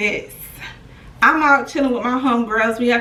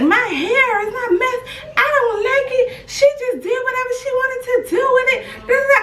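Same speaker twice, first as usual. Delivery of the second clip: put-on irritated snapping, very high and shrill; 13 semitones higher than usual. Retelling a woman getting into the Uber, mimicking a snapping woman. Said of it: "She's still snapping".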